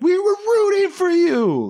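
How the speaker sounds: put-on very high, swooping, full-throated loud yell. Venting about a disappointing movie studio, shouting like Tyra Banks. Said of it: "go Tyra Banks on you and just start shouting".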